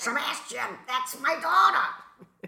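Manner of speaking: called out high and slow. Quoting the psychiatrist at the beginning of the film: Swoosie Kurtz voice. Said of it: "That's my Swoosie Kurtz voice".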